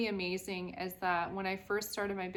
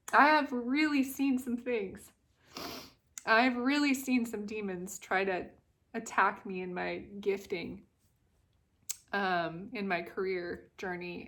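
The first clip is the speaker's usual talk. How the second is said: tearful voice, speaking through tears; 4 dB louder than usual. Sharing a career story with viewers, crying. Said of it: "I know you guys can feel it now that I'm crying".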